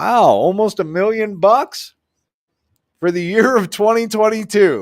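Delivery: very high, loud speech through laughter. Reading a town tax levy certificate aloud, laughing while talking. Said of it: "I'm sorry, I'm laughing".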